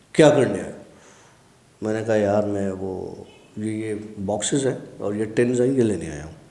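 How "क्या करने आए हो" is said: imposing, angry, commanding, very slow, swooping and drawn-out. Retelling what a sweeper demanded of him: imitating an angry, commanding voice. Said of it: "रौबदार आवाज़ में, गुस्से वाली आवाज़ में".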